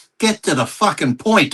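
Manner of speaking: put-on, blunt, impatient heckling call. Retelling a yell while walking past an interview: retelling a yell. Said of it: "I just yelled out".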